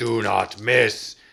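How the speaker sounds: loud, slow yelling. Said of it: "yelling in their ears, saying".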